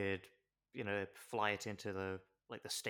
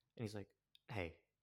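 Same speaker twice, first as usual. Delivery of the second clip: ordinary talk, nothing marked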